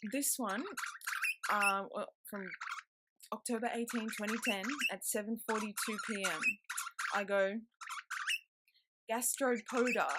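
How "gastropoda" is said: gastropoda said slowly with falling intonation. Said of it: "I don't know how to pronounce that".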